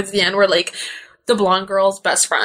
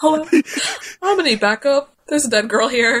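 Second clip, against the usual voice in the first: casual, unbothered, super chill cop voice, pitched up; 6 semitones higher than usual. Retelling a movie cop finding a body: imitating a super chill cop. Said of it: "and super chill".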